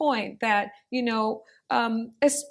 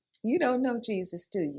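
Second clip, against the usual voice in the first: put-on caring tone, quieter; 2 semitones lower, 5 dB quieter than usual. Retelling what an older lady said over the speaker's shoulder, imitating a caring tone. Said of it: "She said it in a caring way".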